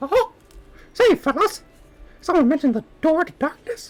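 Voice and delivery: squeaked out at a very high pitch. Speaker demonstrates an impression for listeners; Mickey Mouse impression. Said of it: "I can do an okay Mickey Mouse impression".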